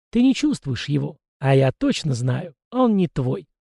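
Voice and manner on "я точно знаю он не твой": plain reading voice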